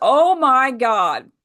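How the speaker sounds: a real loud shouted exclamation. Retelling hearing someone call out while lying there, imitating a loud shout. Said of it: "like real loud".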